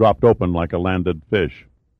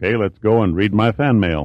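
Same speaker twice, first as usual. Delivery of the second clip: usual speaking voice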